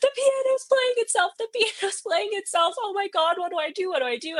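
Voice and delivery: mock, very high, weeping, frantic, panicked sobbing. Retelling calling a good friend after running out the front door, reenacting own sobbing panic. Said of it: "weeping, sobbing".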